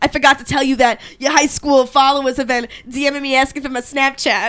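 put-on Long Island accent. Retelling what a Snapchatter said to the speaker, in Brayden Sparnick's Long Island accent. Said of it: "so this is his Long Island accent".

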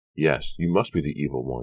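ordinary delivery, nothing marked

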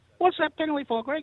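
very high-pitched rising voice. Referee recalling a player questioning a penalty: Steve Roach's high-pitched voice. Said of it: "he had one of these high-pitched voices".

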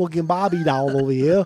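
loud, awful, put-on Australian accent. Joking about the bass player's name, in a terrible Australian accent. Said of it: "That was a terrible Australian accent".

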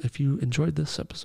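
whispering. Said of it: "I'm just whispering".

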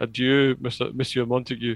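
usual speaking voice

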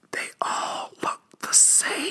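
slow, hushed, secretive whisper. Joking about not trusting allies, saying an aside: mock whisper. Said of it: "I'm gonna whisper this so no one else can hear it".

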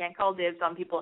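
ordinary talk

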